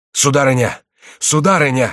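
alarmed, frightened and urgent calling out. An old man races up the stairs and, seeing a lady, cries out: frightened cry. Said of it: "вскричал Реми испуганным голосом".

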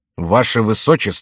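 ordinary delivery

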